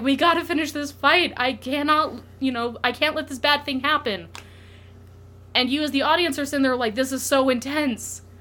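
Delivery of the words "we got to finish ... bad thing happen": acted-out screaming, higher pitch. Speaker describes the story's climactic fight, retelling Akihiko's scream. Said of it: "just basically screaming".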